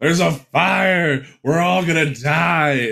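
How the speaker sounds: high, frantic, panicked yell, die stretched long. Retelling a playwright's story, acting out his yell at the top of his lungs. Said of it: "he's yelling at the top of his lungs".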